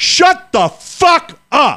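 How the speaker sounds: shrill, high, full-throated top-of-the-lungs scream. Telling a story, retelling a man on a deck shouting at the waitress, top of lungs. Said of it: "top of his lungs".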